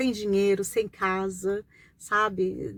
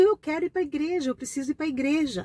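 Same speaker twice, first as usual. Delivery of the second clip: put-on tearful, crying voice, pitched higher; 7 semitones higher than usual. Retelling begging to be taken to church: retelling a tearful plea. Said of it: "chorando, chorando".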